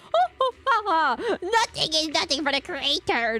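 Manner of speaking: gloating, evil cartoon villain voice, high and slow. Showing how a voice actor was told to play an evil cultist, evil cartoon villain voice. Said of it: "act like you're an evil cultist who just goes".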